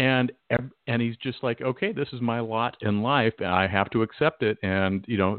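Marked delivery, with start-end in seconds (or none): none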